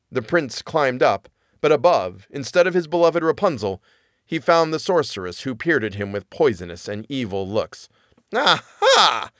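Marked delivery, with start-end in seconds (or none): 8.3-9.2 sneering, scornful exclamation, high-pitched. The sorceress finds the prince climbing up instead of Rapunzel: scornful cry. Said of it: "she cried scornfully".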